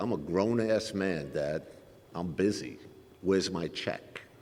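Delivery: quiet, slow, flat delivery. Father retells his son's answer to his texts, quoting son speaking quietly. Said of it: "And he just quietly said".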